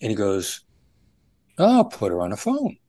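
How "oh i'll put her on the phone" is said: suddenly agreeable, obliging, accommodating voice, pitched up. Retelling a kidnapper's reply over the phone, imitating an accommodating tone. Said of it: "a accommodating tone of voice".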